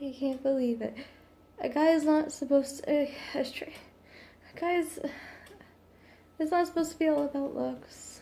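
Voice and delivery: crying, stumbling speech through tears. Apologizing for crying, the speaker keeps talking: crying while speaking. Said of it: "I'm crying".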